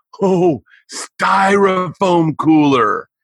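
high loud whisper. Retelling what he said to his buddy in a silent moment: retelling a loud whisper. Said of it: "in a loud whisper".

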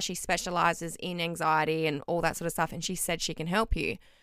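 normal talking voice

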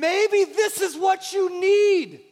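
loud, high, slow yelling. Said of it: "Sorry, I'm yelling".

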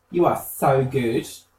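normal talking voice

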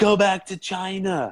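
acted very high, very slow, drawn-out hollering. Retelling what a driver in a pickup did at a corner: imitating a driver yelling. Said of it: "he just yells out".

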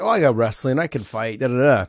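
ordinary delivery

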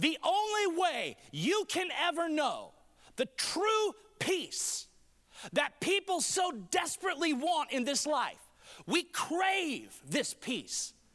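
yelling at full volume. Speaking to an audience, shouting. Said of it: "I'm shouting today".

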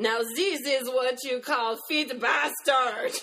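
put-on French accent. Narrating Terry's exclamation as the friends taste the wine, in a strong French accent. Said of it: "with a strong French accent".

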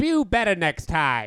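very loud, booming put-on advocate voice. Asked on a podcast to be an advocate for it, a host answers: advocacy voice. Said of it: "That's my advocacy voice".

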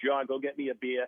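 strong, thick put-on Boston accent. Retelling what a man used to say to the speaker as a child, thick Boston accent. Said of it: "he always had a thick Boston accent".

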